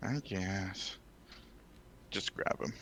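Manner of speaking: very quiet, low mumble under the breath. Answering in character, a grudging reply: muttering under breath. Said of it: "under my breath".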